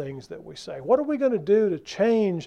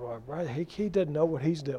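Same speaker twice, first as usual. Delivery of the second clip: low, soft grudging mumble under breath. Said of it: "you mumble the entire time you do it".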